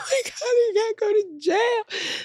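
sobbing, very high-pitched, drawn-out crying. Retelling being put in a police car, imitating own past crying. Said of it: "crying my eyes out".

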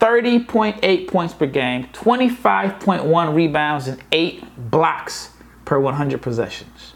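very slow, deliberate, drawn out word by word. Having announced he'll say this slowly, the speaker reads out the numbers very slowly. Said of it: "I'm gonna say this slowly".

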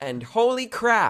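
put-on little kid yelling full blast, very high and shrill. Retelling her little brother shouting at the end of mass, retelling a child's shout. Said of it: "shouted at the top of his lungs".

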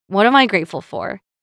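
usual speaking voice

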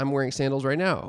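plain

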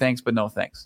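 ordinary talk

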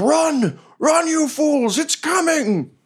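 very high, very slow, drawn-out, frantic panicked yell. Voicing a fleeing hobgoblin warning the party: hobgoblin yelling a warning. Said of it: "And he's like".

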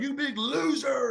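put-on, shrill, high-pitched jeering yell. Retelling yelling at a wrestler in the crowd: retelling yelling at someone. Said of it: "I'm just yelling at him".

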